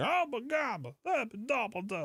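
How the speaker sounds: very high, slow, drawn-out odd voice. Doing a Bill Cosby impersonation while joking about odd voices: Bill Cosby impersonation. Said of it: "doing a Bill Cosby impersonation".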